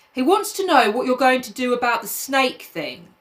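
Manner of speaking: ordinary talk, nothing marked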